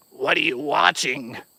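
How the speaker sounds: possessed-sounding demonic voice. Retelling what she asked him while he watched videos, imitating a demon voice. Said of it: "Like a demon".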